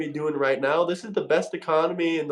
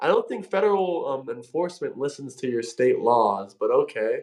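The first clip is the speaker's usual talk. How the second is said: ordinary talk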